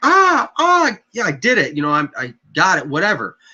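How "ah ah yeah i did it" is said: high, triumphant, victorious whooping and cheering. Retelling how the juvenile sounded after killing a deer: imitating a juvenile screaming in triumph. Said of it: "He starts screaming like".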